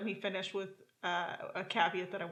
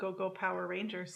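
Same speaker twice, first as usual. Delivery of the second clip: ordinary talk, nothing marked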